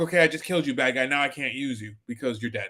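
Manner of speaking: low, offhand, matter-of-fact deadpan delivery. Reviewer acting out a film character's line, imitating deadpan matter-of-fact delivery. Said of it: "just matter of fact".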